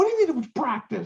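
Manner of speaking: acted screaming. Retelling screaming at the computer after a round was called practice: retelling own screaming. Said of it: "I'm screaming at the computer".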